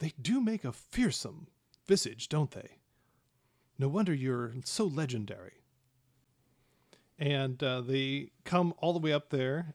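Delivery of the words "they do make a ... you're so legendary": speaking in a whisper. Narrating a scene where a baron leans over to the listener, whispering. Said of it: "leans over to you and whispers".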